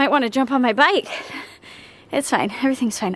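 out of breath, winded. Vlogger talking to viewers after asking for comments, out of breath. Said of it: "I'm out of breath".

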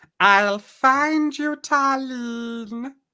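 high-pitched sorceress character voice. Narrator reading the sorceress Mordana calling out to Tarlene: high-pitched Mordana voice. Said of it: "you hear a high-pitched voice".

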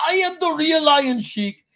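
play-acted shrill screaming, pitched very high. Retelling a show where a caller faked being Iron Sheik, mock-screaming Iron Sheik impression. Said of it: "was screaming".

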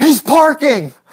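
put-on high, excited yelling, like startled kids.

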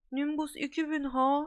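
drawn-out moan, full of envy. Ron reads the letter Harry hands him and reacts with an envious moan. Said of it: "diye inledi".

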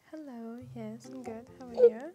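cute, cuddly-sounding voice. Answering a friendly greeting: soft, cuddly, cute voice. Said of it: "your voice just sounds so like soft and cuddly and cute".

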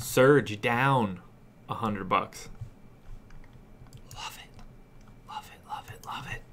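hushed, soft whisper. While playing a game, reacting to players' salaries going down: whispering. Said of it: "I'm whispering".

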